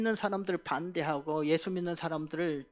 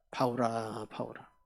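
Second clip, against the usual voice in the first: soft put-on voice, much lower and quieter; 7 semitones lower, 3 dB quieter than usual. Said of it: "아주 부드러운 음성".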